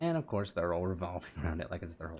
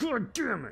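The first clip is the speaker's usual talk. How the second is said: mock angry, aggressive outburst; 4 dB louder than usual. Retelling how an enemy reacted in the game: imitating someone mad and aggressive. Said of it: "He got all mad and aggressive".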